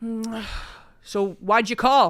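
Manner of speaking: slow, wary, knowing dad voice, drawn out. Imitating an Irish dad answering a phone call: imitating an Irish dad. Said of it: "my Irish dad is like".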